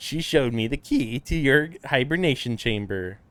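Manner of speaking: deliberately irritating, annoying put-on character voice. Reading a game character's dialogue aloud: very annoying voice. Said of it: "I'm doing a very annoying voice".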